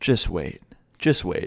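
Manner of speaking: put-on cool, composed, very calm and level. Retelling a classmate's quiet threat after an eraser hit him: imitating Chris speaking very calmly. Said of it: "turns around very calmly and looks him in the eye and goes".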